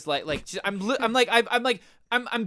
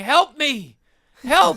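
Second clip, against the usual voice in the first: put-on loud, high-pitched drunken yelling cries; 6 semitones higher, 7 dB louder than usual. Retelling being lost in a hotel, imitating own yelling. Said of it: "You were yelling that?".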